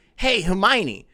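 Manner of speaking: put-on cool, swaggering Bulgarian accent. Recalling Harry Potter and the Goblet of Fire, greet Hermione in Viktor Krum's Bulgarian accent. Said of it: "What does a Bulgarian accent sound like?".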